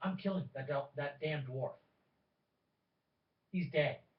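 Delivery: in-character whispering. Speaking in character, leaning in to another character: in-character whisper. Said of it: "as he whispers to you".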